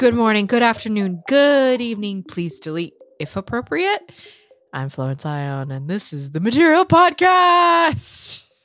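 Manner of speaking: loud, high, eerie, ghostly announcer voice. Host opening the material podcast, in a spooky voice. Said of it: "That sounded a little bit spooky".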